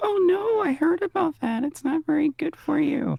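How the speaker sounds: put-on very high little kid voice. In a skit, a kid replies to a stranger, little kid voice. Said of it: "Hey, kid".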